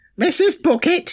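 very high-pitched voice. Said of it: "the old Alison Bouquet joke".

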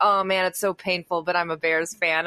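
ordinary delivery

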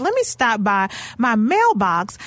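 plain

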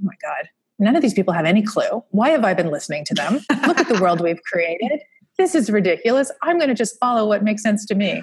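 play-acted voice full of indignation. Recalling a realization at almost fifty, retelling past indignation. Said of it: "I love the indignation in your voice".

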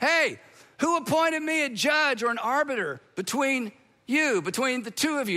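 yelled, tossed back mildly. Retelling how Jesus answered a man in a crowd: imitating Jesus yelling back. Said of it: "yelled back".

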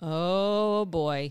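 acted flat, level, calm monotone with drawn-out "oh". Recalling how Dennis reacted as he saw it happening; imitating Dennis's calm monotone. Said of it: "in a very, you know, monotone sort of voice".

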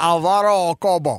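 put-on Cuban accent, gangster voice. Radio host says a listener's name the way he likes to, Scarface voice. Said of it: "I like to say it like Scarface".

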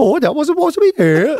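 put-on Welsh accent, pitched way up. Joke with another speaker about how Welsh people sound, imitating a Welsh accent. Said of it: "That's what Welsh people sound like".

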